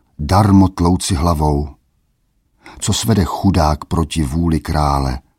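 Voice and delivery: ordinary delivery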